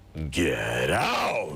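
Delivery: loud roaring beast voice.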